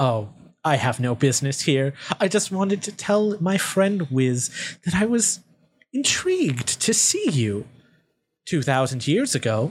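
dark, sinister, unsettling woman's voice. Voicing a woman character who shows up and annoys the others, in a woman character voice.

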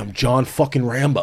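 plain

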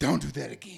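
words said with hard panting breaths. Retelling what he said after turning around scared, imitating hard breathing. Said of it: "I'm breathing hard and saying".

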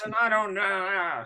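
put-on high-pitched, grumpy old man voice. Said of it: "I'm sounding like the grumpy old guy here".

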